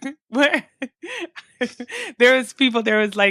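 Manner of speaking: high, laughing protest. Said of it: "a little bit of sarcasm in there".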